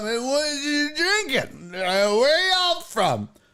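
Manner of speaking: put-on sloppy, slurred drunk talk. Retelling a drunk cruise guest's questions: imitating a drunk man slurring. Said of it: "He's slurring".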